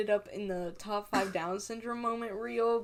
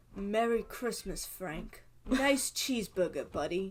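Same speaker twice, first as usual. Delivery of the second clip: put-on American accent. Quoting a TV scene where Esmeralda pretends to be American, Esmeralda's put-on American accent. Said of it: "maybe I can do an American accent".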